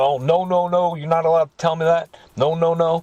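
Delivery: acted, frantic, insistent screaming and yelling. Retelling how a lady in court shut down the speaker: imitating someone screaming and yelling. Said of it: "She's screaming and yelling".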